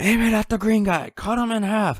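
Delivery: very high-pitched, yelled. Retelling how General Ross yelled orders in the film: imitating General Ross yelling. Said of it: "he yelled, like".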